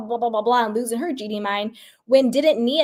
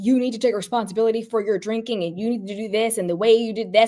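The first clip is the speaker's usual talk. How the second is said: put-on confrontational, accusing tone. Retelling Jason confronting Danny about drinking: imitating a confrontational lecture. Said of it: "totally came at him".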